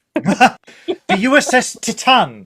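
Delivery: very high, very slow, drawn out, each word savoured. Announcing the starship to discuss: Matt Berry impression. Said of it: "I was trying to impersonate Matt Berry".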